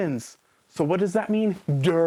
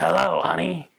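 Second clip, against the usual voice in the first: put-on, odd, animated cartoon character voice. A speaker mocks an actress's voice in a role, Patty and Selma voice. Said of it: "It's Patty and Selma from The Simpsons".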